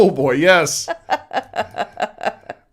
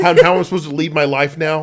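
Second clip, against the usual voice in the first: ordinary talk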